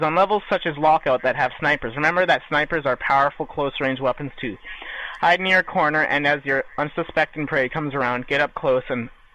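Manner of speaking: normal talking voice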